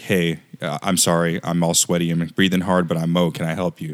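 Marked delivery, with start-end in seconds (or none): none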